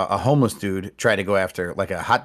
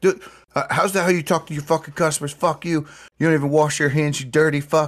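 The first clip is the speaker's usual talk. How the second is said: mock, high, enraged, shrieking tirade; 7 semitones higher than usual. Retelling how a customer screamed at a hot dog vendor, imitating someone screaming. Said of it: "screaming racial obscenities and everything else".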